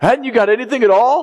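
very high yell, calling out from far off. Retelling a stranger yelling at fishermen from a hundred yards away, retelling a yell. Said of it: "yelling at them".

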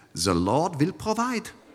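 soft, put-on Swiss accent. Recalling your mom's constant answer to tough times in your childhood, imitating mom's Swiss accent. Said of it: "in her Swiss accent".

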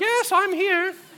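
bad fake voice, shrill, squeaky, high and loud. Acting out a demon answering worshippers in a temple: demon badly faking Diana's voice. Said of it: "You don't sound like Diana".

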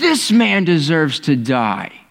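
slow, drawn-out, furious angry outcry. Retelling the story, voicing David's outburst: retelling a furious shout. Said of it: "David speaks up and is furious, and he shouts".

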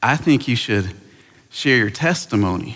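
put-on Texan accent. Retelling his mom's advice on what to preach, texan accent. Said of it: "this is my best Texan accent".

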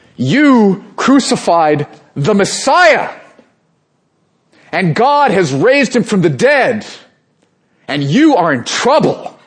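mock fearless, bold, high-pitched shout. Speaker retelling a man addressing thousands in Jerusalem, retelling a bold shout. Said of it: "he shouts out and he says".

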